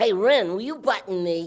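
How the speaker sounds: cartoon cat character voice. Doing Ren and Stimpy voices, Stimpy voice. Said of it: "Ren and Stimpy".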